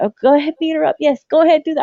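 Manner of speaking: mock yelling. Retelling how they cheered at a wrestling match on TV: imitating own yelling at TV. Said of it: "I was yelling at the T V".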